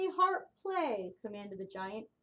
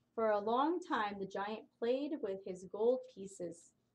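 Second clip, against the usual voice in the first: plain reading voice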